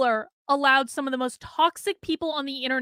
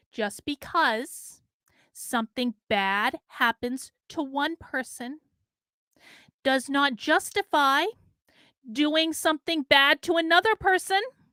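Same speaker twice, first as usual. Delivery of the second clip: drawn out word by word, very slow and deliberate. Speaker addressing people in the chat, speaking very slowly. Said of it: "Let me speak very slowly".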